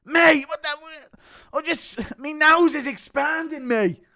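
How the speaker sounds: very loud, shrill, high put-on voice. Impression of McGregor mistaking bicarbonate of soda for Coke, McGregor impression. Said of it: "McGregor confusing Aspinall's bicarbonate of soda for Coke".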